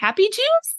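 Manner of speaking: put-on very high little girl voice. Retelling a video clip recorded in a little girl's voice: imitating a little girl's voice. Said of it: "a little girl's voice".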